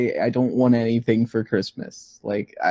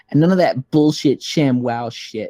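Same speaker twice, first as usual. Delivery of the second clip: play-acted snide, venomous, very bitchy tone; 2 semitones higher than usual. Recounting the stepmother walking in from the other room: mock-bitchy voice. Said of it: "the bitch's bitchiest voice you could imagine".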